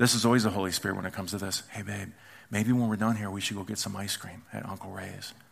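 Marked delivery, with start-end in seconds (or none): 1.7-5.3 tiny, small, soft, hushed voice. Acting out calling to a partner two rooms away, in a small quiet voice. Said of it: "small quiet voice".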